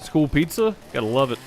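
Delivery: ordinary talk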